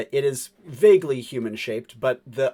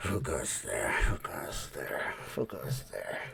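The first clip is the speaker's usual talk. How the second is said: slow, whispered muttering; 10 semitones lower, 12 dB quieter than usual. Voicing a slack-jawed butler creature on the stairs: muttering creature voice. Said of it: "you hear it muttering to itself".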